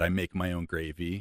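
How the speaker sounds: usual speaking voice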